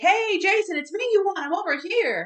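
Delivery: urgent high-pitched yelling. Retelling a movie scene where Tommy calls to Jason: imitating Tommy screaming. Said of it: "Tommy's screaming".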